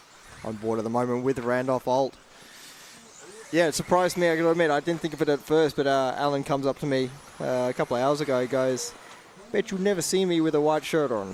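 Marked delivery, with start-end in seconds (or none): 9.5-11.4 clumsy, bad put-on American accent. Recalling Alan coming up to him, the speaker quotes him in a bad American accent. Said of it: "that was a bad American accent".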